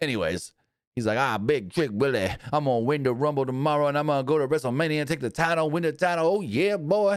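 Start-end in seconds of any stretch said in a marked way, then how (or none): 1.2-7.2 seventies pimp-style talk, pitched a bit higher. Retelling a wrestler's interview: imitating Trick Williams' seventies pimp voice. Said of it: "he talks like a freaking pimp from the seventies".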